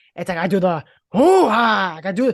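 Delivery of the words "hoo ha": loud, enthusiastic shout with gusto. Showing another speaker a Pacino bit: Al Pacino impression. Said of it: "I sometimes do Pacino accents".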